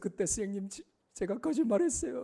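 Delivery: weepy, tearful, crying voice. Acting out a grown-up former student confessing to the teacher: imitating a student crying. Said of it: "막 울면서".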